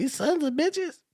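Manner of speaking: high-voiced shrill scream, lisping each s. Retelling how Milt came out of the cold room yelling, imitating Milt screaming with lisp. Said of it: "Screaming because he had a real high voice and he talked with a lisp".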